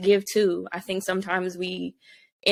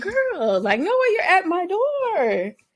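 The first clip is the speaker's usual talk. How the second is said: high, slow, amazed disbelief. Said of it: "I was like".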